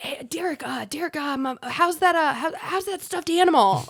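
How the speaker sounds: hoarse, raspy shout. Retelling a guy who ran out to talk to him: imitating a raspy lost voice. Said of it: "got this really raspy sounding voice because he had lost his voice".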